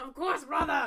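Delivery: Scottish-sounding dwarf voice. Voicing a dwarf accepting a drink: Scottish-sounding dwarf voice. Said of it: "You sound Scottish".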